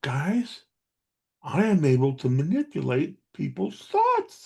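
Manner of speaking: stage whisper, fairly loud. Performer retelling how he leans in to his audiences, loud stage whisper. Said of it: "I whisper in a loud voice".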